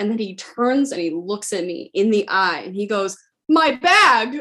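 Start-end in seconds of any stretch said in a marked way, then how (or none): 3.5-4.4 much higher, louder mock gasp. Retelling a man who turned and looked the speaker in the eye, retelling a gasping exclamation. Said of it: "he gasps".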